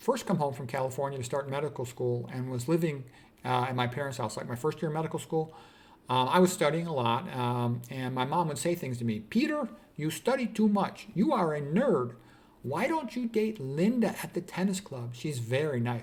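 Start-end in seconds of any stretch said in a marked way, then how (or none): 9.2-16.0 put-on slow, sing-song Puerto Rican accent. A medical student quotes his mom, Puerto Rican accent. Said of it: "My mom had this Puerto Rican accent".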